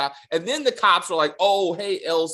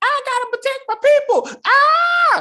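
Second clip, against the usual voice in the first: overacted very high scream, long drawn-out "ah"; 7 dB louder than usual. Mocking an actor's bad scene, imitating Larry screaming. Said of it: "his screaming".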